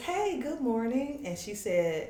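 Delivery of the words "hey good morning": put-on, very high, sugary little sweet voice. Retelling answering a morning phone call, in a put-on little sweet voice. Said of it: "I put on my little sweet voice".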